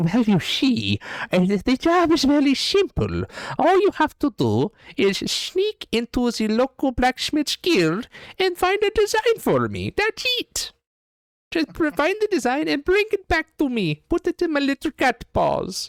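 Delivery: very high, loud, swooping cat-man voice. Narrating a game and voicing the Tabaxi man to the players: Tabaxi cat-man voice. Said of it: "you hear the Tabaxi man say".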